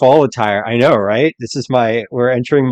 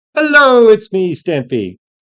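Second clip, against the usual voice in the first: very high, swooping, sing-song put-on character voice; 10 semitones higher, 3 dB louder than usual. During a timed team round, doing the Stampy voice. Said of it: "doing the Stampy voice".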